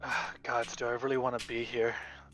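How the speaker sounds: muttering, mumbling under breath. Voicing a character sneaking toward a wall: muttering under breath. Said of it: "I'm just gonna mutter to myself under my breath".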